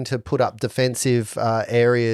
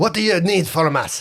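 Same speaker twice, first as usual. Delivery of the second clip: fake French accent, pitched up; 6 semitones higher than usual. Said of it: "accessing French accent".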